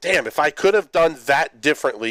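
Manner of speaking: plain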